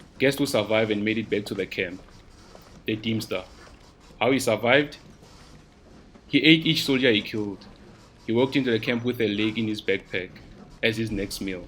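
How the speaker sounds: ordinary delivery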